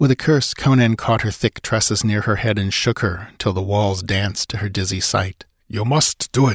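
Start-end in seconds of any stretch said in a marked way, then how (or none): 5.7-6.6 words slowly hissed out. Narrator reads a man's words to a terrified woman: hissed. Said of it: "he hissed at her".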